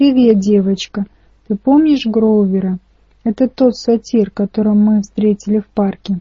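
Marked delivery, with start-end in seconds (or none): none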